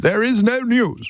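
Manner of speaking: put-on very high, slow, old-time posh RP announcer. Mocking old-time posh announcers who wore bow ties to read the news: posh english announcer voice. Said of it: "that's posh English".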